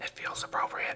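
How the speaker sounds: hushed whisper. Hiding in the corner of another player's base, whispering. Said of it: "I don't know why I'm whispering".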